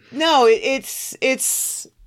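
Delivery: high, very slow, halting stammer. Trying to say what a picture on the wall is: stuttering. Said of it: "I'm stuttering".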